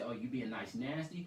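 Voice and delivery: ordinary talk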